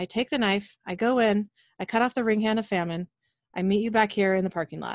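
ordinary delivery

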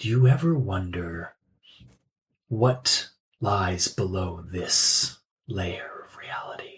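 empty, hollow, very low tone. A game narrator voices a shadowed figure turning toward a player, in a hollow voice. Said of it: "in this like hollow voice".

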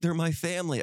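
put-on tearful voice. Retelling what Mom said about her family: imitating Mom in tears. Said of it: "And in tears, she goes".

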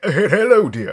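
shrill, booming, very high, very loud posh aristocrat voice. As a raven with mimicry, greet someone in the aristocrat guy's voice. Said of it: "speaks in the aristocrat guy's voice".

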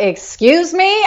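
very high, offended, indignant retort. Retelling her own offended reaction to her brother: indignant reply. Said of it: "my finger goes up".

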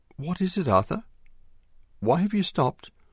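anxious, concerned, very high-pitched voice. Narrator voicing Mary calling to Arthur under the floor when he stops, concerned. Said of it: "she spoke in a concerned voice".

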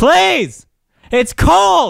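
very high, loud, pleading yell. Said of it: "what's with all the yelling".

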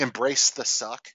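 ordinary talk

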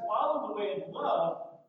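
usual speaking voice

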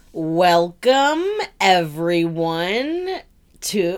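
slow, mechanical, drawn-out robot-like voice. Opening the podcast, one host says the welcome in a slow robotic voice. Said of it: "you say it so slow and like a robot".

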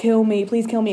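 ordinary delivery

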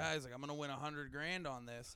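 plain

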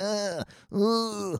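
high, soft fake dying moans. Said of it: "he's like, pretending to die".

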